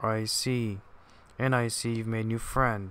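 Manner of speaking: ordinary delivery, nothing marked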